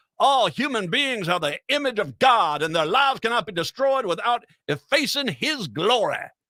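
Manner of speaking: put-on over-the-top Alabama accent. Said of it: "in the most stupid-sounding accent I could possibly do".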